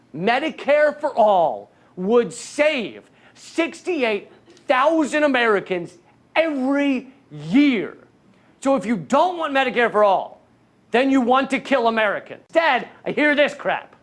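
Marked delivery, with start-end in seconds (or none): 0.2-8.0 slow, deliberate, drawn-out, spelled-out word by word. Speaker repeats the point for the listener, said slowly. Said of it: "Let me say it slowly for you".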